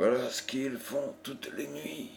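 scornful murmur under the breath. A young woman nearing the lit fort with her companion remarks: murmured with contempt. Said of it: "murmura Violante avec mépris".

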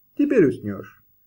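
plain

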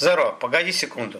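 plain reading voice

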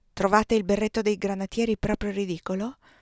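plain reading voice

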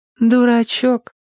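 tender, fond, affectionate, very high-pitched voice. After looking closely at him following his speech: affectionate. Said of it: "ласково констатировала".

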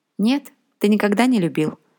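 ordinary talk

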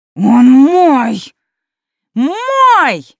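high, loud, piercing hysterical shriek, "Мой" drawn out. Narrating a character insisting the dragon belongs to her: hysterical shriek. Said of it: "Истошный визг".

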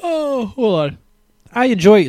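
words pulled through a very high-pitched yawn. Starting to list picks for the episode, yawning mid-sentence. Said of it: "sorry for the yawn".

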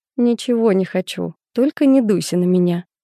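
ordinary delivery

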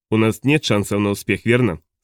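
ordinary delivery

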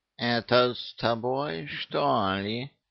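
very slow, contemptuous scoff. Murzik the cat answers Molotkov's challenge, with a contemptuous snort. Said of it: "презрительно фыркнул Мурзик".

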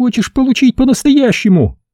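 very high, forced through clenched teeth. Yasmin, her arm twisted behind her back, to the narrator: through gritted teeth. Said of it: "Процедила она сквозь зубы".

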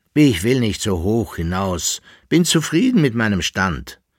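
ordinary delivery

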